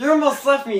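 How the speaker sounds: cheeky, loud, high taunting call-out.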